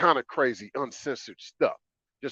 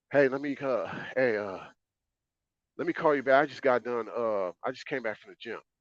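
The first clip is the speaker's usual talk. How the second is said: faked, out-of-breath, breathless voice. Mimicking a woman calling back after a supposed workout, imitating someone out of breath. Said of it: "She kind of sound out of breath".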